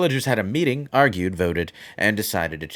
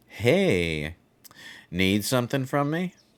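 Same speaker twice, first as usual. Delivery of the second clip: slow and calm character voice, pitched higher; 4 semitones higher than usual. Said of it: "he talks really slow and calm".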